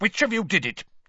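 cold, curt snap. A Ministry official closes in on the boys and demands an answer: snapped. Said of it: "he snapped".

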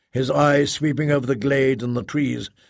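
ordinary delivery

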